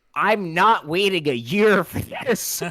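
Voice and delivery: mock frustrated, high, full-volume scream. Recalling a young man behind them after a Spider-Verse screening: retelling a scream. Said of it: "at the top of his lungs".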